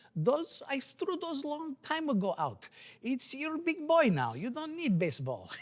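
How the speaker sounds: put-on heavy Romanian accent, very high and loud. Telling of going to get baseballs to autograph, quoting her: thick romanian accent. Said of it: "she had a very uh, thick accent. She says".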